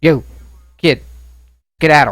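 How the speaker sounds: mildly menacing, slightly intimidating, held in check. Voicing a character who turns back to a kid: slightly intimidating, not super aggressive. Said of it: "in a slightly intimidating but not super aggressive manner".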